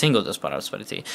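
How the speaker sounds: ordinary delivery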